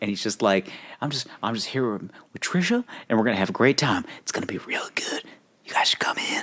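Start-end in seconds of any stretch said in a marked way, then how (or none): 1.0-6.4 put-on breathy voice, quieter. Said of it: "breathy voice".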